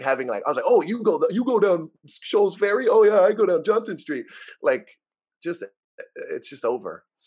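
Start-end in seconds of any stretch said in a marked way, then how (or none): 0.7-4.2 high, chirpy, chatty voice.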